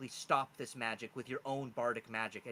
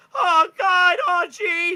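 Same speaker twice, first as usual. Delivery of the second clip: very high, shrill, loud, drawn-out cartoon voice; 21 dB louder than usual. Voicing a small creature in a pocket: Morty voice. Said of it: "He kinda sounds like Morty from Rick and Morty".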